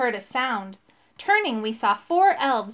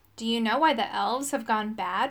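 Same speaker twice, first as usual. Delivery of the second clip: plain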